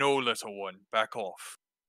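deep, dim-witted, dumb big-brute voice. Voicing a character's line to someone little, in a deep, dumb big-guy voice. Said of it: "that deep, kind of dumb, big guy voice".

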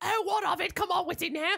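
high-pitched cozy cartoonish lady voice. Retelling a scene and voicing the woman's lines, Mrs. Potts voice. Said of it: "this is also the voice he does for Mrs".

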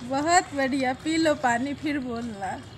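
soft, hushed, soothing voice.

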